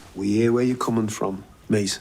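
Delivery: put-on Liverpudlian Scouse accent. An actor in a show about Liverpool delivers the line in a Liverpool accent. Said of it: "doing a Liverpudlian accent".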